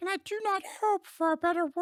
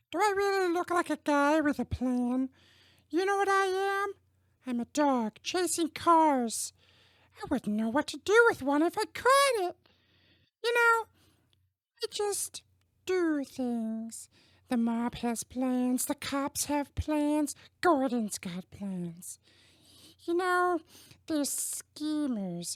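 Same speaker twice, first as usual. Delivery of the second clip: little high puppet voice playing a movie villain. Try a well-known Muppet's voice on a famous villain from cinema, in an Elmo impression. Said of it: "this is my impression of everyone's favorite little red Muppet".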